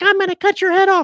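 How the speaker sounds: shrill, very high-pitched, very loud voice. Imitating a character from an audio version, with a really high-pitched voice. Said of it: "he's got a really high-pitched voice".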